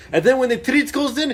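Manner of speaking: high, loud, furious yelling. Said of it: "He yells at us, like".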